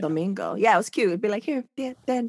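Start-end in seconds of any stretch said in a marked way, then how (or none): 1.4-2.3 secretive, high, hushed half-whisper. Retelling how a grandma secretly handed over money: imitating a grandma half-whispering. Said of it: "Still whispering".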